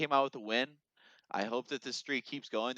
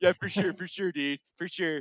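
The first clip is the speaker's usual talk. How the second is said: agreeable tone, voice pitched up a bit; 6 semitones higher than usual. Mimicking Mitch hurrying along on the sideline: imitating Mitch hurrying along. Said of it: "just hurrying along".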